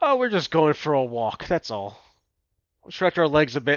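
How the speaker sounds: mocking, sarcastic tone. Voicing a character answering a guard about leaving the kingdom: sarcastic in-character line. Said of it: "I'm gonna have Lopi sarcastically say".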